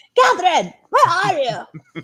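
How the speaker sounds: very high, sing-song, swooping, drawn-out dad voice. Retelling a phone call from her dad: imitating her dad's voice. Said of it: "you know how my impersonations are".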